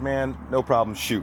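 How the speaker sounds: ordinary talk, nothing marked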